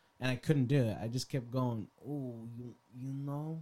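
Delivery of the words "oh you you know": put-on Italian accent. Retelling what he kept saying while high: imitating own stereotypical italian accent. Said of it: "the more stereotypical Italian you become".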